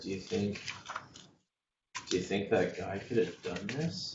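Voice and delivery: speaking in a hushed voice. Narrating a game scene, the speaker voices figures examining wreckage in hushed tones. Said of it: "speaking in hushed tones".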